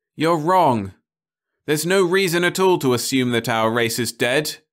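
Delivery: crying out. Narrator reads a man answering people on the verge of panic, crying out. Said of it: "he cried".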